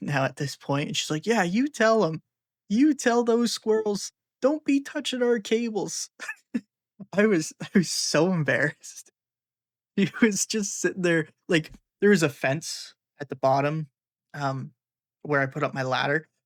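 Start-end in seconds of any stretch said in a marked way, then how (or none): 1.3-6.1 put-on cheerful teasing, high, through laughter. Retelling a lady in a lawn chair laughing at them, imitating her laughing. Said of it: "laughing hysterically at me".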